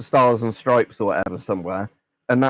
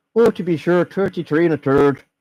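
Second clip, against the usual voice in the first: fake, clichéd, high-pitched put-on Irish accent; 6 semitones higher than usual. Joking that Irish accents are hard to do: put-on Irish accent. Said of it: "if I try and do Irish".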